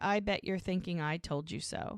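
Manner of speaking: usual speaking voice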